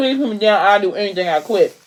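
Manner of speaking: plain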